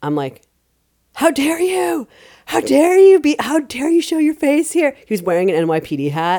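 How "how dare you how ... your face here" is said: very high, loud, shrill, confrontational shout. Retelling confronting a politician at a parade: retelling yelling at someone. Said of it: "I yell at him".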